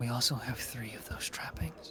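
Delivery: speaking in a whisper. Amid the chaos, not wanting anyone else to hear, whispering. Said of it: "I'm whispering this through the chaos".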